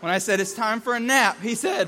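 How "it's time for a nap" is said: ordinary talk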